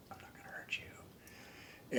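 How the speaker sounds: very slow, soft, hushed whisper. Retelling talking to a moose up close: retelling a whisper. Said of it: "and I just whispered".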